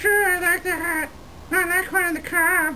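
very high little ventriloquist dummy puppet voice. A ventriloquist's dummy answers its handler about a nickname, in a ventriloquist dummy voice. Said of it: "It's my brand new Navajo dummy".

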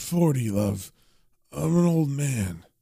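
put-on drunk-sounding muttering. Narrator voicing John passed out drunk on the bed, John's drunk muttering. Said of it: "he's kind of muttering to himself saying".

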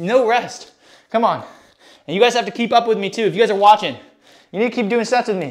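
winded, panting, out-of-breath talk. Streaming a workout and leading viewers through a circuit, out of breath. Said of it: "Why are you out of breath?".

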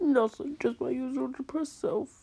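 sniffing while speaking. Asked what the problem is, the speaker answers: sniffling.

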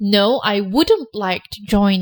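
slow, deliberate answer voice.

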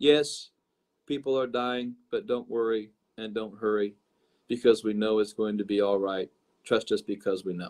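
very slow, deep, low, dragging flat monotone drone. Recounting how a woman spoke during the shootings, the speaker imitates her very slow monotone. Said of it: "as she spoke in very slow monotone. I'm going to just imitate what she did".

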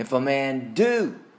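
stress on do, hit with wide pitch swing.

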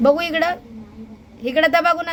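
loud, high-pitched coaxing voice.

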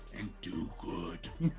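breathy, whispered superhero voice, barely audible. Signing off to listeners at the end of the episode, in a Batman voice. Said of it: "I was trying to do a Batman voice".

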